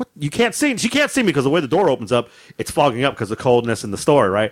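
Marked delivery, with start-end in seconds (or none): 0.0-0.8 high-pitched, pitched-up woman's voice. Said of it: "She's like".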